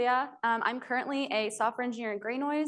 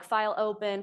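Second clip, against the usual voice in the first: plain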